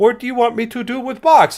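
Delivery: high, flat, obedient robot monotone. Voicing a small robot that has just been activated: servant robot character voice. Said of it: "he lifts and says".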